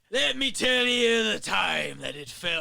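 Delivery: stagey, put-on seafaring pirate voice. Playing around reading a line aloud, slipping into a pirate voice. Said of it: "I feel it sound like a pirate".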